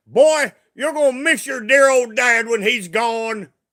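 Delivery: put-on broad, heavy Kentucky accent. Quote what your late dad used to say to you, imitating dad's thick Kentucky accent. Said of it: "he had used to have a really thick Kentucky accent".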